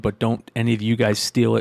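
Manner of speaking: ordinary talk, nothing marked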